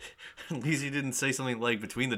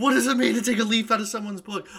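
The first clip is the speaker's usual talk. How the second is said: put-on angry outburst, higher and louder; 10 semitones higher, 9 dB louder than usual. Retelling how a character who punches a car reacts: imitating an angry character. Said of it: "he just starts punching the car over to, like, he's like".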